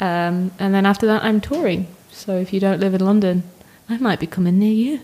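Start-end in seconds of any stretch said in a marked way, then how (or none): 2.1-5.0 unsettling, creepy, lurking voice. Guest telling listeners about upcoming touring, in a creepy voice. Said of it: "Didn't mean to say that in such a creepy voice".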